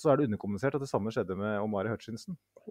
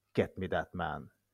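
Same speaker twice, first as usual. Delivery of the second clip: put-on botched, failed try at an American accent; 5 semitones lower than usual. Quoting what he told his recruitment team, in a failed american accent. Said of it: "En sånn amerikansk aksent som ikke klarer".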